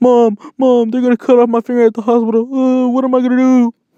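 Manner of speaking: high-pitched, tearful sobbing delivery. Retelling crying to mom about the stuck ring: imitating crying. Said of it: "I'm freaking crying".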